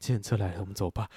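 weak, drained, lifeless half-dead tone. Acting out announcing the taxi has come, put-on half-dead tone. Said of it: "就带这个语气，就是要死不活的感觉".

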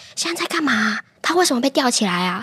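put-on child's whisper. Retelling a child quietly asking his mother questions during a show, imitating a child whispering. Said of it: "他其实会一直向他妈妈很小声的提问".

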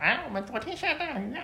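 very high, fake, put-on falsetto voice. Retelling what the host said about the rain, imitating someone in falsetto. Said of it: "他每次模仿人家都会用这种假音".

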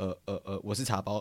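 put-on stammering, stuttering speech. Retelling awkwardly walking up to a group mid-conversation: imitating own stammering. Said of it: "然后很结结巴巴地说".

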